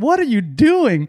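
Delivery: high-pitched, stretched-out, incredulous.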